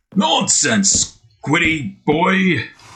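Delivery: animated, put-on cartoon boss voice. One man voicing three cartoon characters, addressing Squidward in a Mr. Krabs voice. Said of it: "three different voices at once".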